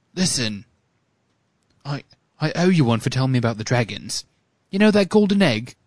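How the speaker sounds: put-on English with British accent. Reading script dialogue aloud as Cedric, opposite Harry, in a British accent. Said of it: "We're going to do it in British".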